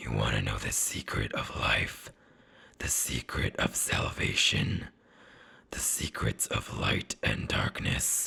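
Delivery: throaty, guttural, breathy, whispered orc voice. Narrator reads an orc speaking to the listener: guttural orc voice. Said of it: "his guttural voice reflects from the opposite wall".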